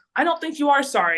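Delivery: high, loud, aggressive voice.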